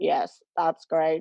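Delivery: low, mechanical, machine-like robot voice. Recalling a terrifying moment replying to someone, imitating own robot voice. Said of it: "like robot voice".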